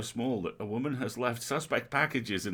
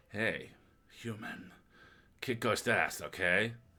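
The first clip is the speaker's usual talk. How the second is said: put-on Belgian accent, lower and slower; 2 semitones lower, 3 dB quieter than usual. Voicing the character Pixel, Jean-Claude Van Damme voice. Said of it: "Pixel's now Jean-Claude Van Damme".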